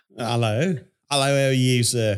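put-on British accent. Quoting how a boy talks after his lessons, imitating a british accent. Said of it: "a British English word".

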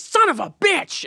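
very high, drawn-out outburst. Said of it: "Baldwin being like".

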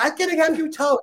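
mock angry yelling, very high-pitched. Retelling how the gas station guy reacted to the crooked Jeep, retelling a yell. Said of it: "He's like yelling".

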